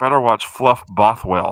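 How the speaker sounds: theatrical stage whisper. Retelling what a little angel on the shoulder said: imitating a half-whisper. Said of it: "he whispered to me".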